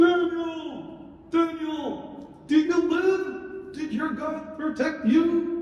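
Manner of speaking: very high, very slow puppet voice. A lion puppet tells the story of Daniel: Mister Lion puppet voice. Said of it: "the story through Mister Lion".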